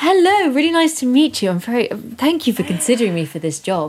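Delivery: female TV newsreader voice. Southerner shows off her accent in a mock job interview, news-lady voice. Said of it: "you sound like the news ladies".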